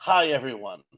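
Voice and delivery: ordinary talk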